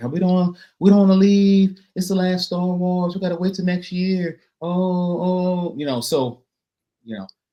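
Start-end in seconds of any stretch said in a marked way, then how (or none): 0.0-5.7 petulant, whiny complaining voice, a bit pitched up. Retelling people still walking into Galaxy's Edge after the last show, Gene whining voice. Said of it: "that was my my Gene whining voice".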